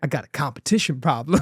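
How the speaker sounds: imitated American accent. Quoting a man's reply to a question: put-on American accent. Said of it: "apologies for my American friends out there who are going to hear my American accent".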